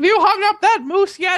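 very high, shrill, loud nagging screech. Host mimics his wife yelling at him, imitating wife screaming. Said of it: "She's screaming at me".

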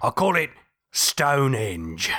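put-on very low-pitched English accent. In a Stonehenge sketch, the boss answers his worker, English accent. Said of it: "you have an English one".

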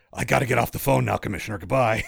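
gruff caped superhero character voice. In a joking bit, ending a phone call with the Commissioner: Batman voice. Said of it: "Still doing the Batman voice".

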